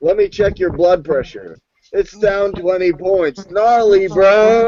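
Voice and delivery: put-on surfer dude voice. Joking that the other speaker would be a surfer doctor, surfer dude doctor voice. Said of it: "So you were like a surfer doctor".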